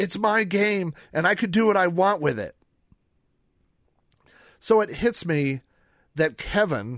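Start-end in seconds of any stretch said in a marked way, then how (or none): 0.0-2.6 mock childlike voice, high-pitched, yelling. Retelling how a kid answered from the back room: imitating a kid yelling. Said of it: "this kid yells from the back room".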